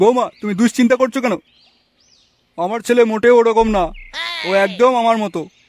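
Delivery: put-on deep elderly man voice.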